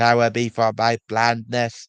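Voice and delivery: loud, booming, weird computer-like voice. Recapping a fan series episode, the speaker quotes Nigel the Diesel: weird computer voice. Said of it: "where he had that weird computer voice".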